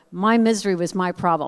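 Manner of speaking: plain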